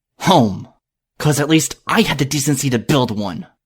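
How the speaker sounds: snarling, harsh and aggressive tone. Reading a story aloud, a pony leaving for home: snarling. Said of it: "I snarled over my shoulder".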